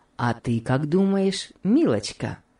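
plain reading voice

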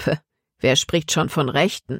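ordinary delivery

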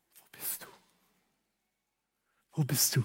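gentle, soft, searching tone.

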